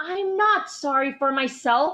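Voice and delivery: high-pitched yelling. Told to stop feeling sorry for herself, answering back, yelling. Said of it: "Don't yell at me".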